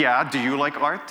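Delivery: acted, put-on defensive tone. Recounting own reply to a man's joking question, retelling a defensive reply. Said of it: "And I said defensively".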